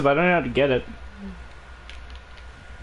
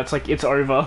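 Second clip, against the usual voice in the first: ordinary talk, nothing marked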